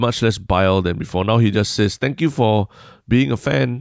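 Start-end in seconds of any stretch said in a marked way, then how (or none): 2.0-3.8 mock-sarcastic tone, higher and slower. Describing how a poster now answers criticism, retelling a sarcastic reply.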